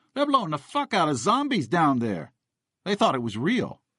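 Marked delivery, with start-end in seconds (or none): 0.2-2.4 mock shouted outburst, high pitched. Retelling what a guy hanging out a window yelled at night, imitating someone yelling. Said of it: "This guy was yelling".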